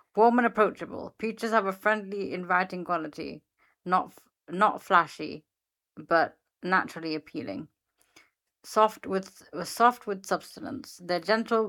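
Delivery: ordinary talk, nothing marked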